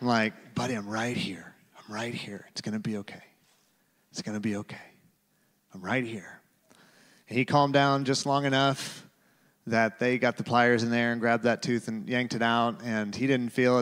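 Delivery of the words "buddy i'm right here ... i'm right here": very quiet, hushed whisper. Retelling calming a screaming eighteen-month-old during a tooth pull: retelling a whisper. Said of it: "I'm just whispering back to my buddy".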